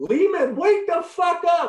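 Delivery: mock shrill, very high, loud yell. Retelling a yell heard from the bench during a game: imitating Brof yelling. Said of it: "I hear Brof yelling from the bench".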